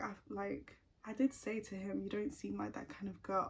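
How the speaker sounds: plain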